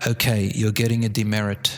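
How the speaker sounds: said in a low tone. Speaker showing how to tell off frustrated kids, low tone. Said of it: "but say them at a low tone".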